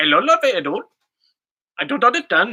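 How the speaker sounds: put-on Indian accent. Showing they can do different accents, speaking in a put-on indian accent. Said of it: "I can do an Indian accent".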